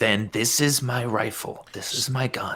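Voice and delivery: slow, hushed, drawn-out half-whisper. Speaking to a rifle in a mild break of sanity: half-whispering to his gun. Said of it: "He whispers to his gun".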